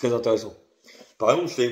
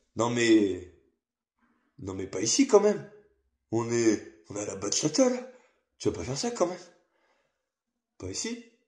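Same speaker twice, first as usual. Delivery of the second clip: fun, teasing, playful sing-song tone; 4 dB quieter than usual. Retelling what was said to a dance partner at bachata: imitating own playful tone. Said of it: "je lui dis comme ça, de manière fun".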